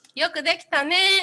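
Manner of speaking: put-on high, sweet voice for a small child. Speaker retells what she said, hand on theirs, as if talking to a small girl. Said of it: "like you were talking to a girl".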